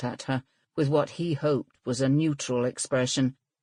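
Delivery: ordinary delivery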